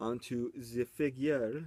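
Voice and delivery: slow, very drawn out, light put-on French accent. Changing subject mid-talk, just for fun, in a little french accent. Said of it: "Little French accent there for no other reason than I wanted to".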